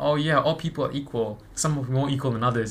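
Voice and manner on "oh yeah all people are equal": plain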